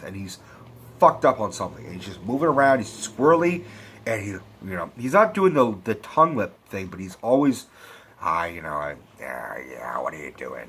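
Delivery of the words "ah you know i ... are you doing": low, whispery put-on impression voice. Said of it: "he's got the exact same fucking voice".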